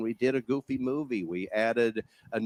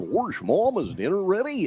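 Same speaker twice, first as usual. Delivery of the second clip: high, loud, swooping cartoon voice; 8 semitones higher, 5 dB louder than usual. Retelling practicing the voice as a child, asking about dinner: Goofy voice. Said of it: "I practiced it and ran around the".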